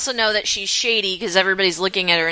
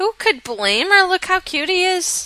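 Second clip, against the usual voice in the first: put-on elderly grandmother voice; 11 semitones higher than usual.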